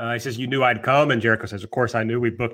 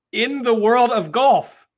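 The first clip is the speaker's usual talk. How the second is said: put-on British accent, very high and drawn out; 11 semitones higher, 5 dB louder than usual. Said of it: "then he switches to British accent".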